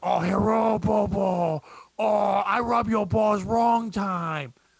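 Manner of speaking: very slow, put-on seductive, sexy voice. Closing a podcast, joking about a phone message for another guest: put-on sexy voice. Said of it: "that's the sexy voice I do".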